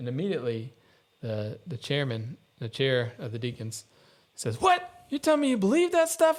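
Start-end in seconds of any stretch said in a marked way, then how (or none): 4.6-6.4 mock shrill, very high country-boy yelling outburst. Retelling how the chair of the deacons yelled across the table, imitating the yell. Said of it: "just like starts yelling at me".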